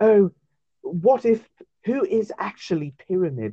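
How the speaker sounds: put-on breathy, high pretty-boy voice. Mocking a YouTube theory video, the speaker imitates its narrator: breathy pretty-boy voice. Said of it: "like a breathy pretty boy voice".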